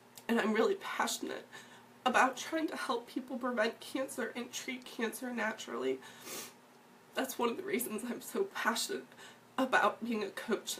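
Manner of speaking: tearful, emotional voice. A coach speaking, apologizing for getting emotional: emotional, crying. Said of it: "I really apologize for being emotional".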